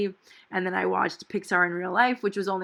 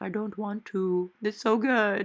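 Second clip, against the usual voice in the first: mock talking with full mouth, much slower. Retelling answering her sister at an all-you-can-eat meal, mimicking talking with full mouth. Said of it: "with noodles in my mouth".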